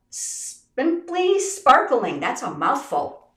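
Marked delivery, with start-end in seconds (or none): 0.1-2.2 high, slow, grand, drawn-out delivery. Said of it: "this bundle is called".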